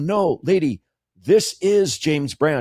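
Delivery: mock perturbed, indignant, slow and offended. Retelling arguing with a lady on a sidewalk: retelling being offended. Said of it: "and I got all, like, offended".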